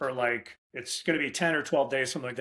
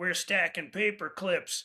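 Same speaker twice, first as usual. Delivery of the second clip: real raspy, scratchy, drawn-out, pitched-up voice; 5 semitones higher than usual. Retelling what a man said during cold calls: imitating T J McWilliams's raspy voice. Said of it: "he had a real raspy voice".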